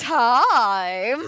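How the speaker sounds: heavy stress, leaning hard on the word time. Retelling how a pun was said: imitating own stress on TIME. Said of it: "I said it with emphasis".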